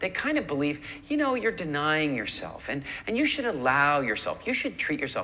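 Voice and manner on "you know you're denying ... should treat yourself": ordinary delivery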